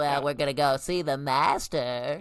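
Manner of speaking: loud, big, dopey, goofy, derpy way of talking. Imitating how a derpy snake character from Clone Wars talks: Morley's voice. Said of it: "he kinda talks like this".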